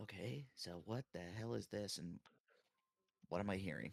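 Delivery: theatrical stage whisper. Asking the others what this is and what is being heard: stage whisper. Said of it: "I'm a stage whispering".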